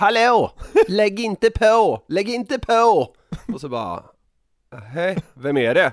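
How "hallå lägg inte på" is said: put-on Scanian accent, higher pitch, slower pace. Speaker retells an unknown caller's first words on the phone: strong Scanian accent. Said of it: "en skånsk röst som bara säger så här".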